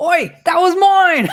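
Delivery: high, loud, indignant outburst.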